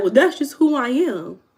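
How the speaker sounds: high-pitched voice. Talking about yelling, the speaker acts out what some people say, imitating what some people say. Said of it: "they'll be like".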